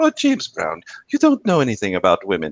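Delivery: affectionate, sweet, sing-song teasing. Retelling how a friend teases with a nickname: imitating a sweet tone. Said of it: "she says it in such a sweet way".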